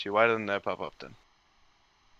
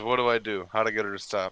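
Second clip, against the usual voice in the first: ordinary talk, nothing marked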